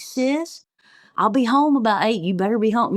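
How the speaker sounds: kindly, tender, sweet fatherly voice. Retelling how dad spoke to his daughter: imitating dad sweet and nice. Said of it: "he'd be all sweet and nice to me".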